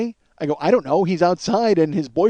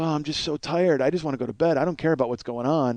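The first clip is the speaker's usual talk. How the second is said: put-on weary woman's voice, lower and quieter; 3 semitones lower, 8 dB quieter than usual. Retelling what a tired neighbor said during a police raid: imitating a world-weary woman. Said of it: "Miss World Weary".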